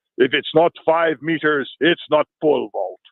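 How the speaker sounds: put-on scoffing, with a heavily laid-on thick Russian accent. Retelling a pole vaulter scoffing at women's heights: imitating thick Russian accent. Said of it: "in his thick Russian accent".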